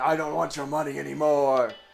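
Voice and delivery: fake Tibetan accent. Narrator voicing a man who has taken up a sword, bad Tibetan accent. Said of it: "and like a bad Tibetan".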